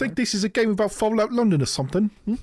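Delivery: very high-pitched, put-on British accent. Answering a request to do the segment in a british accent: put-on british accent. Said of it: "can you do this segment in a British accent".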